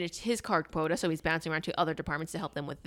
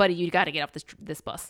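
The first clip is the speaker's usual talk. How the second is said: ordinary talk, nothing marked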